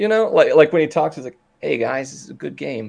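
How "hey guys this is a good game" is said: timid, soft, creaky, vulnerable-sounding voice. Imitating a psychologist friend who sounds vulnerable when he talks: imitating a friend's vulnerable-sounding voice. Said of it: "he kinda sounds a little bit, um, vulnerable".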